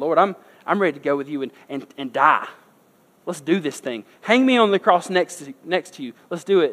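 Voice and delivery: loud, put-on, cocky, arrogant boasting bravado. Retelling a Bible scene, voicing Peter: imitating cocky arrogant Peter. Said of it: "all cocky and arrogant".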